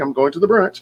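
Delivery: mock snarky, sarcastic tone. Narrating a scene, repeating a woman's sarcastic reply to a compliment.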